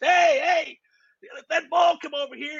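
mock, very high shouted holler. Retelling how the guys playing dominoes yelled at the kids: imitating men yelling. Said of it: "They start yelling at the kids".

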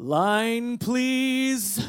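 booming, stretched-out delivery. Retelling a frozen actor finally speaking at the play's beginning: booming Noah-like voice. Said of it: "he says with his most booming Noah-like voice".

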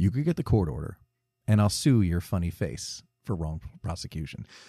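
calm, composed, low, quiet delivery. Describing a TV cut of a film, quoting the character's calmer version: imitating Venkman calmly. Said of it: "says something much calmer".

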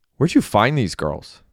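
ordinary delivery

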